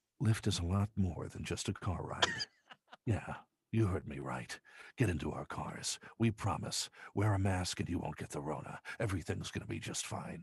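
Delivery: snooty, breathy advertisement voice. Parodying an ad, the speaker performs a snooty breathy Lyft brand voice. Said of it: "the snootiest, breathiest kind of, you know, brand voice".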